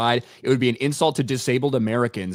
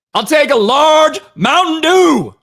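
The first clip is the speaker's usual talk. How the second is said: mock, very high, very loud, drawn-out, exasperated, worn-out; 11 dB louder than usual. Retelling a customer repeating a drink order to a drive-thru robot: imitating a fed-up repeated order. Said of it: "he'd said it a million times".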